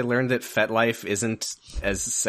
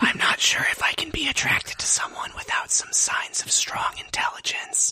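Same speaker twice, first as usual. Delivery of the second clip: mock ASMR whispering, higher. Answering a request to say words, in a put-on ASMR whisper. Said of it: "Welcome to the A S M R podcast".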